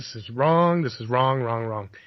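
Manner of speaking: ordinary talk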